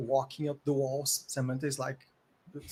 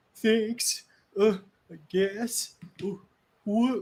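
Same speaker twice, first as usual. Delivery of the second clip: put-on high, slow sobbing child voice, words through sobs; 7 semitones higher, 6 dB louder than usual. Voicing a sobbing kid thanking the rescuers: sobbing child voice. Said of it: "the kid is sobbing".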